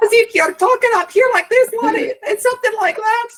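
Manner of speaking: very high-pitched, loud Scottish brogue. Demonstrating for a listener how the character should talk: high-pitched Scottish brogue. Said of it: "very high pitched voice and kind of like a Scottish accent".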